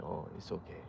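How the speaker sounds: hushed, very soft, calming and soothing voice. Imitating dad comforting someone who is upset: imitating dad's reassuring tone. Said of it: "But just the way he says it".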